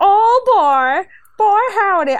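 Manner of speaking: pompous, high, slow, grand, stretched-out drawl. Imagining how a wrestler would talk with a title: imitating Cameron Grimes. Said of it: "He would be like".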